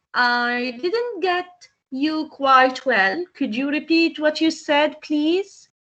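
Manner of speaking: ordinary talk, nothing marked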